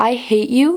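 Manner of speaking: mock utterly calm, even, level delivery. Reenacting what was said to someone the speaker was furious at, retelling a calm delivery. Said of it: "I said it in the calmest way possible".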